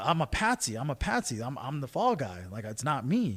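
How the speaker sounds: normal talking voice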